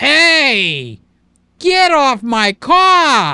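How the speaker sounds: slow, loud, drawled, drawn-out New York accent. Comparing New York and Canada, playing a New Yorker: New York accent. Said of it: "If you're in New York, you say".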